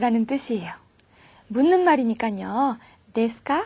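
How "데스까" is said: desuka with a rising pitch lift on ka. Japanese lesson on asking questions: rising pitch at end of desuka. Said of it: "이렇게 말끝을 올려주셔야겠죠".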